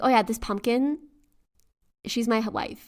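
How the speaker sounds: usual speaking voice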